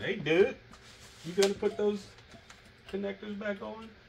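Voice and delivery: put-on screaming, pitched very high. Imagining someone watching who spotted the mistake: imitating someone screaming. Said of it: "somebody was over there screaming".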